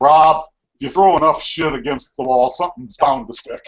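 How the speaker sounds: perfect put-on Texas drawl. Quoting advice a man once gave them about trying things: perfect Texas drawl. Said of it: "he said in this perfect Texas drawl".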